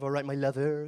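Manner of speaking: put-on Bristol accent. Imitating a mother from Bristol: Bristol accent. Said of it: "She's got that kind of".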